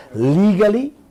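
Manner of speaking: heavy emphasis placed on the word legally. Warning listeners about a new oil-money law: stress on legally. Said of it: "You hear how I'm emphasizing that word?".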